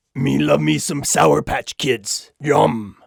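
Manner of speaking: rough, creaky, gravelly demon voice. Closing a list video and asking viewers for candy, in a Halloween demon voice. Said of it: "my Halloween demon impression".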